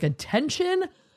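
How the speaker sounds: put-on attention-hungry child voice, high.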